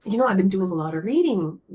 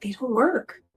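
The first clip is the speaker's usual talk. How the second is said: put-on whisper, higher-pitched; 5 semitones higher than usual. Retelling what a doctor said quietly in a hallway: imitating someone whispering. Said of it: "for him to say that to me in a whisper".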